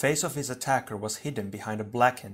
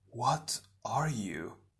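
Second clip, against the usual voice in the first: hushed half-whisper, full of dread; 5 dB quieter than usual. A hero surrounded by shadowy attackers asks what they are, half-whispered. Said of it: "Tahu whispered".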